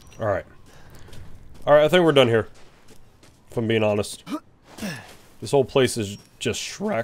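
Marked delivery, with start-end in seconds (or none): 5.4-7.0 voice breaking mid-line. Speaker wrapping up exploring an area, voice crack. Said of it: "Voice crack".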